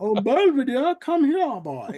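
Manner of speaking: loud, swooping, put-on cartoon character voice. Explaining how they do the voices with cartoons, a cartoon character voice. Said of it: "Love the voices".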